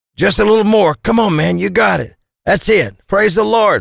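very high, rough, cheering, shouted voice. Narrator cheers Vic on as he pushes the barbell up, shouting encouragement. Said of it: "I shouted".

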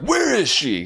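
mock angry shouting, very high pitched. Retelling a movie scene where a man bursts into a hospital: imitating someone yelling mad. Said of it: "He's all, like, mad".

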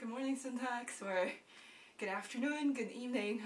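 out of breath. Greeting the show's audience at the start: out of breath. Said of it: "I'm extremely out of breath".

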